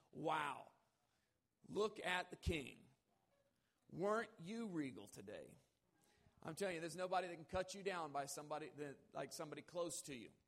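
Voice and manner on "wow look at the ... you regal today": mock, swooping, extremely heavy sarcastic tone. Retelling what someone close said to the king after he danced: retelling a very sarcastic remark. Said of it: "in the most sarcastic voice that you could probably imagine".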